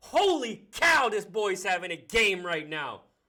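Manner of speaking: very loud, high, thrilled excited yelling. Commentating a football game as a player returns an interception, yelling excitedly. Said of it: "Sorry, I'm yelling".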